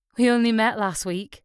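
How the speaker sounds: plain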